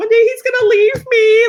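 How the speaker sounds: acted, very high, loud, tearful sobbing wail. Retelling what was said to a husband while pregnant: imitating own past sobbing. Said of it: "sobbing to my husband".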